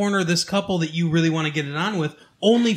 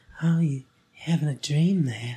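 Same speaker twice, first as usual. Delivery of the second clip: terribly creepy, skin-crawling put-on voice; 3 semitones lower, 3 dB quieter than usual. Describing a creepy-looking guy, the speaker acts him out: terribly creepy voice. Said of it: "terribly creepy voice".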